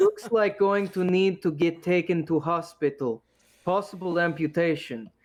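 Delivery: even worse, bad broken English. Voicing the fake doctor diagnosing an ankle in worse broken english. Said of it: "he's speaking in worse broken English".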